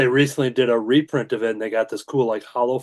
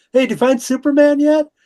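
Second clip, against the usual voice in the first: high, loud yell. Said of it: "I yelled out".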